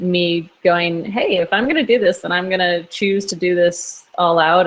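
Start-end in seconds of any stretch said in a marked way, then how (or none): none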